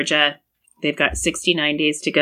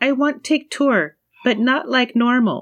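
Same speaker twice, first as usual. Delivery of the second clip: put-on high, babyish, grammar-dropping broken-English baby talk; 9 semitones higher than usual. Recapping a show segment, quoting Rebecca's line in broken-English baby talk. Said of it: "doing the weird broken English baby talk".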